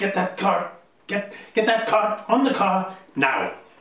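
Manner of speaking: high-pitched, screamed voice. A woman in charge yells at the Goliath while everyone runs around, screaming orders. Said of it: "she's just screaming at the Goliath".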